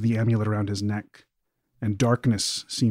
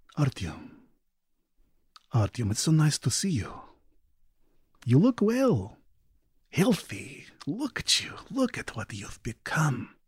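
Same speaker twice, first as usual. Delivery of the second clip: sugary, honeyed, sweet, sing-song high voice; 6 semitones higher than usual. Voicing a character greeting a player's character: sweet voice. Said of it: "with a sweet voice and says".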